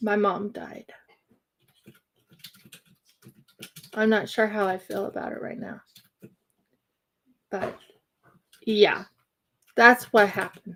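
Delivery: voice on the verge of tears. Telling viewers that mom died recently, close to crying. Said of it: "I sound almost teary-eyed or close to crying".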